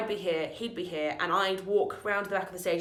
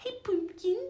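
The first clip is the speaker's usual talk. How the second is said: very high, goofy, silly put-on voice; 12 semitones higher than usual. Greeting him by a nickname during the show, stupid voice. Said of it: "I said it in like a stupid voice".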